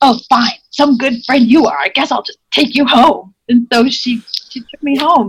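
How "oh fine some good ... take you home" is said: mock-furious, acted angry voice. Retelling a quarrel, the speaker quotes a friend they refused to help: mock-furious retort. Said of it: "she's furious".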